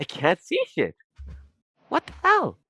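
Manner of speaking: voice cracking and pitching up mid-line. A streamer who can't see the mouse while recording, voice cracking. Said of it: "And my voice is cracking too".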